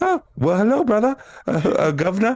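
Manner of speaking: put-on very high, swooping British accent. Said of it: "I can't do British accents".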